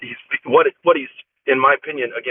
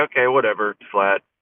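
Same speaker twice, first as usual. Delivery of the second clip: mock nonchalant, blasé tone, lower pitch; 3 semitones lower than usual. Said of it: "blasé".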